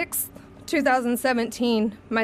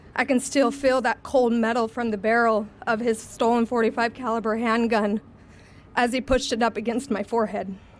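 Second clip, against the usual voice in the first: usual speaking voice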